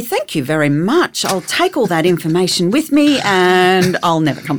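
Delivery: falsely sweet, sarcastic, dismissive, with wide pitch swings.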